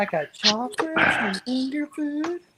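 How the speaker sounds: put-on very high-pitched old man voice. Quoting a cartoon character who invites a boy over: Herbert voice from Family Guy. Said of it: "I like the old man from the Family Guy".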